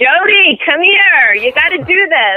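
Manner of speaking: put-on Brooklyn accent, high, calling out. Retelling mom calling from the other room, imitating mom's Brooklyn accent. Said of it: "in her, Brooklyn accent saying".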